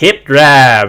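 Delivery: put-on Texan accent. Imitating the head of a training system saying his phrase: Mark Rippetoe Texan accent. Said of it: "him in his Texan accent going".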